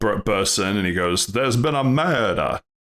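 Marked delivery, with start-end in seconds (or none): 1.3-2.6 put-on stretched, drawled southern American accent. Acting out a detective bursting into the murder scene: Daniel Craig with a southern drawl. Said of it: "Daniel Craig with a southern drawl".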